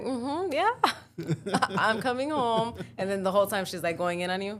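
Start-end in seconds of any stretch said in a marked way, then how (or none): 0.0-2.7 easygoing, agreeable voice, high and slow. Retelling answering a phone call while someone yells, imitating a smiling reply. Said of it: "and then you're smiling like".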